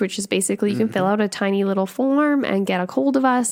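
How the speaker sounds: plain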